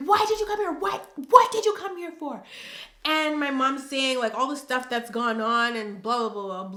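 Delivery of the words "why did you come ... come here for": very high-pitched, mock yelling motherly voice. Retelling how mom yelled at the sister: imitating mom yelling. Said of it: "she's yelling at my sister".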